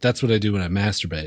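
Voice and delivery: flat, low, monotone deadpan. Making a crude joke to the group, his voice going flat. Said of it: "I like how your voice went flat".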